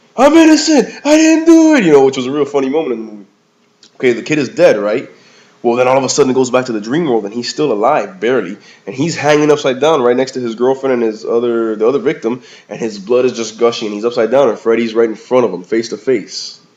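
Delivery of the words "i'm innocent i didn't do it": very high, loud, panicked pleading. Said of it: "the cellmate is like".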